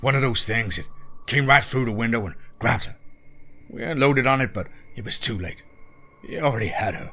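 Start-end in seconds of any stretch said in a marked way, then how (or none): none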